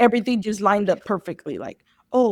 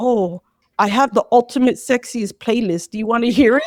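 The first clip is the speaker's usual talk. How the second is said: usual speaking voice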